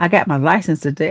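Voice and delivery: plain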